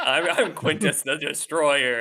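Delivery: slow, drawn-out cartoon villain voice. Mocking a character as a Power Rangers bad guy: Power Rangers villain voice. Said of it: "the bad guy's about to, like, go big and destroy the city".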